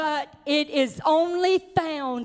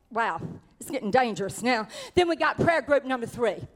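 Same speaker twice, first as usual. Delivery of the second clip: normal talking voice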